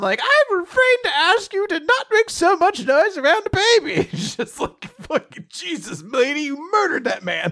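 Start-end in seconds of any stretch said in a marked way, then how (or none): 0.2-4.1 very high, animated cartoon voice, swooping around. Describing a woman who walks in after a man is murdered: Marge Simpson voice. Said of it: "like the Marge Simpson".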